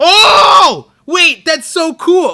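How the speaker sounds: screaming with excitement. Late at night, reacting to a theory, an excited scream. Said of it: "I didn't mean to scream like that".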